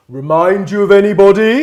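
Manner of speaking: very loud, high, pointed, booming prime-ministerial delivery. Retelling a moment at PMQs, imitating Theresa May: Thatcheresque voice. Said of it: "in this kind of very kind of sort of Thatcheresque way".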